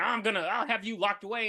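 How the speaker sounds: acted, wound-up, frantic, freaking-out outburst. Retelling a film sheriff's outburst: imitating someone freaking out. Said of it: "he just freaking out".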